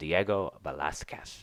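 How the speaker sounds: intentional put-on lisp. Speaker introducing the key Spanish Baroque artist, with a deliberate lisp. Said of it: "I'm saying that with a lisp on purpose".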